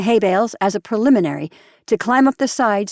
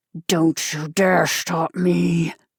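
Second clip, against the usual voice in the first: low hiss through the teeth, very slow; 4 semitones lower, 3 dB quieter than usual. Reading a story aloud, a man defies the narrator who shouted at him, hissing. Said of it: "he hissed".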